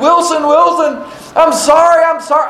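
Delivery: acted-out screaming. Retelling a movie scene of a man swimming after a volleyball, retelling a scream. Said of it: "he's screaming".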